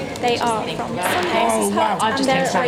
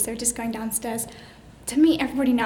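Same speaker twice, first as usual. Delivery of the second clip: a bit out of breath, quieter; 4 dB quieter than usual. Vlogging while heading downstairs to meet everybody for dinner: a bit out of breath. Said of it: "I'm a bit out of breath".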